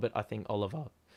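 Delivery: voice cracking. Talking through player votes when the voice cracks mid-sentence: voice cracking. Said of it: "Whoa, voice crack".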